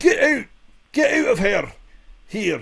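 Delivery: Scottish accent, very high, very slow, swooping. Shouting at someone to get out: scottish accent. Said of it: "I didn't know you could do Scottish so well".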